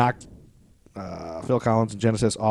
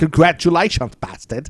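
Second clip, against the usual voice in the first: clumsy put-on British accent, raised pitch. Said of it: "No, that's not even good".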